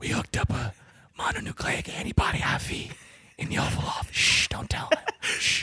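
soft, breathy whisper all the way through. Doing an impression with another speaker, whispering in an impression. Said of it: "Our impression is just whispering".

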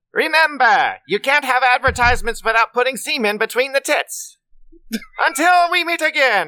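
high-pitched cartoon villain voice. Trying a best impression for an episode: Skeletor voice. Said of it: "Let me see if I can do it in my best Skeletor voice".

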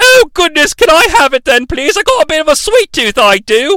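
high-pitched, thrilled governess voice. Retelling a film scene, voicing the governess: imitating an excited governess. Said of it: "the governess is really excited".

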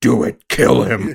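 slow, rough, dark-toned yell. Recapping a scene, quoting one character's yell in Batman voice. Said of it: "Batman voice".

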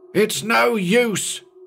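piercing, very high-pitched shriek. A man on the ship, about to climb the rail, shrieks; shrieked. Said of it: "he shrieked".

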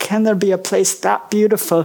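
ordinary talk

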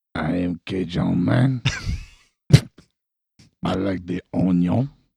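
loud bellow, rough and creaky. Podcast intro, answering the host's introduction in a Cajun Man voice like an old man. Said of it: "instead it sounded more like an old man".

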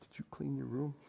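barely audible, very soft, hushed half-whisper. Retelling holding a daughter after hugs: retelling a half-whisper. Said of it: "And I just whisper".

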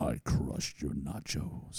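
mock menacing near-whisper, hushed and breathy. Fan retelling what a band member said onstage after a stage dive; retelling a menacing line. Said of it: "goes very menacingly".

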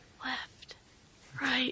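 soft, breathy, barely voiced whisper. Retelling how someone lost called notes into the headset: imitating a whisper. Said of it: "whispering into the headset".

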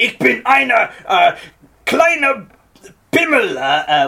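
fierce, ferocious, shouted masculine voice. Showing the masculine, ferocious type mentioned in Scrubs: shouted, ferocious masculine voice. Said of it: "the masculine kind of ferocious one ... I just shouted".

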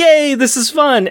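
high, slow, delighted, gleeful exclamation. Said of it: "And Cable's like".

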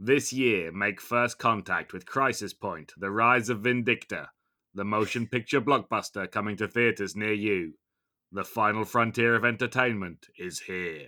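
blockbuster movie trailer announcer voice. Announcing a motion picture blockbuster coming to theaters, movie trailer announcer voice. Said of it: "I can't do his voice".

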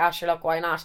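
ordinary talk

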